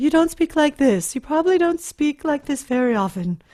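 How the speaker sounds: speaking in head voice. Showing a class what speaking in head voice sounds like. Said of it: "That would be speaking in your head voice".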